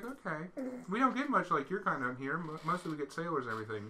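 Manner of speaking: soft, hushed tavern waitress voice. In a role-play game, the narrator voices a waitress talking to a player: waitress character voice. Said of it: "There's a, a waitress here going around. That's who we need to talk to. She's she's dancing also, / She's she's dancing also, / a waitress here going around".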